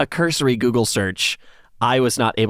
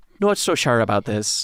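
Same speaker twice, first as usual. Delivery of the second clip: put-on woman's voice with a generic Irish accent. Retelling what a woman said, imitating Amanda in generic Irish accent. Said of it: "I am not nailing her accent".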